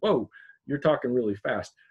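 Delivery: ordinary delivery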